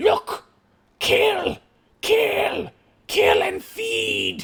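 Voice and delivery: crude, broken, demented goblin yell, very high, drawn out. Game master voicing a goblin just before the party rolls initiative, crude demented goblin shout. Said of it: "very like demented tier goblin shout".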